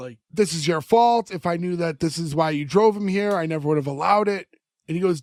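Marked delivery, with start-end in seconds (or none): none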